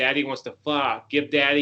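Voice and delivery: ordinary talk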